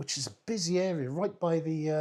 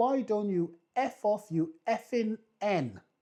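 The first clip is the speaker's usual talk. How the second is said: mock, half-shouted, drawn-out mild yell; 5 semitones higher than usual. Retelling what he yelled during a pub crawl: imitating a shout at top of voice. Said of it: "at the top of his voice at Notting Hill Gate".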